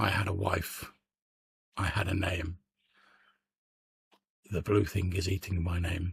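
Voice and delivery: somewhat sorrowful, almost sad, mournful voice. Voicing a creature that once had hands, answering a question, in an almost sad voice. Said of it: "in a almost like sad voice".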